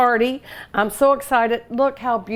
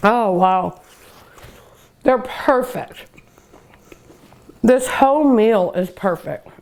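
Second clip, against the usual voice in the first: talking while eating, mouth full. Tasting the meal, eating while talking. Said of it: "I'll quit eating and talking with my mouth".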